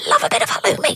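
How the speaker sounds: irritating put-on voice. A radio host chatting about barbecues on Saturday night puts on a very annoying voice. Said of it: "that was a very annoying voice".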